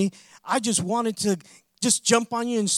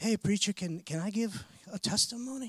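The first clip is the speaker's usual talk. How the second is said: mock meek, humble, extra-sweet, nicest-possible tone; 9 dB quieter than usual. Preacher retells a man coming back up to ask him, imitating a humble, nice voice. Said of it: "like the most humble, nicest voice".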